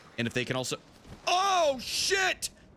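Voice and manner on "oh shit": sudden, shrill, very high screamed outburst. Ranking games, the speaker misclicks and is screaming. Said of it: "sorry for screaming".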